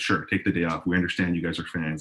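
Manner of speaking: ordinary talk, nothing marked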